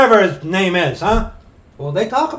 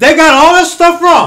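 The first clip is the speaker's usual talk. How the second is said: loud, mocking, sarcastic tone; 7 semitones higher, 10 dB louder than usual. Mocking opponents' views about Rome, sarcastic. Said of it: "If you can't tell this is sarcasm".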